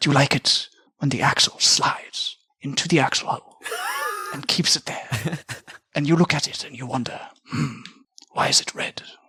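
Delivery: put-on ASMR-style voice. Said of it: "Oh my gosh, the accent".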